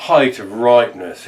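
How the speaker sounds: normal talking voice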